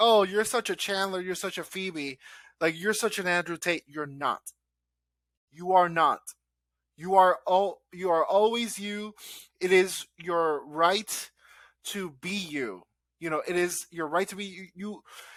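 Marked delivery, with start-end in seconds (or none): 0.0-3.8 play-acted snide, scornful, sarcastic mocking tone. Retelling what others say, mocking them: mocking imitation. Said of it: "what I was mocking earlier".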